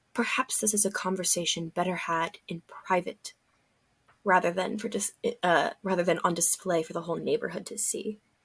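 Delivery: very quiet, hushed low voice. Turning to Sassafras as a park audience gathers, in a lower voice. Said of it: "kind of in a lower voice".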